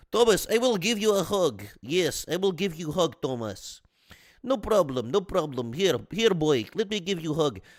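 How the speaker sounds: put-on Bulgarian-accented English throughout. Retelling how she offered the sick speaker a hug, in a put-on Bulgarian accent. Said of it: "How do I do a Bulgarian accent?".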